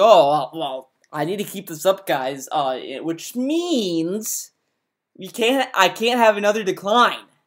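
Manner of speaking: scornful, halting, derisive, "means" drawn out. Mocking another streamer's plea to keep Patreon up: mocking imitation of Phil. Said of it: "I like how he's like".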